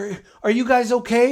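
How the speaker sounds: high, loud, frantic, over-eager manic gush. Retelling a woman rushing up to people leaving church, imitating her manic voice. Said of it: "And she's like really manic".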